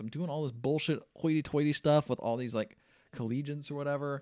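ordinary talk

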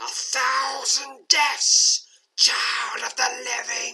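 piercing, very high, loud undead monster hiss. An undead woman threatens the listener, hissing. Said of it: "She hisses".

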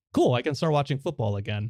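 plain

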